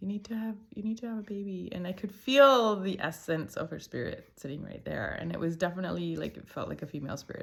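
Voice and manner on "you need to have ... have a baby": whispered, higher pitch. Retelling what a girl spirit on the shoulder kept saying: imitating a whisper. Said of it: "whispering periodically".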